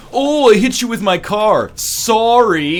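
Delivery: slow apologetic Canadian accent. Doing an impression of a canadian, imitated canadian accent. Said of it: "Here's my impression of a Canadian".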